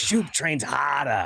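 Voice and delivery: put-on boastful wrestler-style talk with a Boston accent. Quoting how a wrestler talks, in Shoop's Boston accent. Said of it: "He has that Boston accent. He goes".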